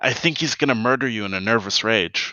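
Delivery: theatrical stage whisper. Voicing a character who turns to the remaining Diablo: stage whisper. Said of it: "says in a stage whisper".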